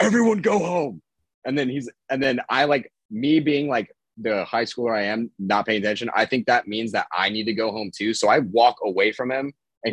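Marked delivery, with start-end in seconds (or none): 0.0-1.0 very high, loud screaming. Retelling a coach ordering everyone home: imitating the coach screaming. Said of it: "he just screams back".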